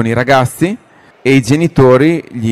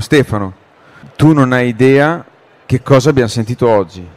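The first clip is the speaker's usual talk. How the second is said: ordinary delivery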